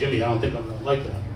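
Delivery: low, quiet, quick, reluctant voice.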